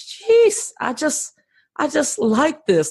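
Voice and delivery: high, delighted exclamation.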